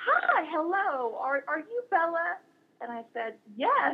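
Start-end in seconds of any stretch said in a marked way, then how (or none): 0.1-2.4 slow, high, warm Southern drawl. Retelling how a woman greeted her among strangers: imitating Betty's Southern accent. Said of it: "said in this wonderful Southern accent".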